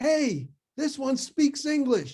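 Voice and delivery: shrill, full-volume shout, very high and very loud. Retelling what a soldier did after jumping back: imitating someone yelling. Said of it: "he yelled".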